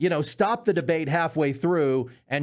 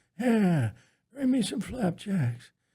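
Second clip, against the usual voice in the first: high-pitched, put-on old-man voice; 5 semitones higher than usual. Acting out ordering flapjacks at the Waffle House: Joe Biden impression. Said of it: "when I do my Biden impression".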